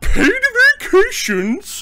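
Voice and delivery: put-on scandalized posh accent, very high, loud, shrill, swooping. Retelling a movie bad guy's reaction to a plan: imitating a scandalized posh villain. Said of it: "he actually delivers it in that kinda".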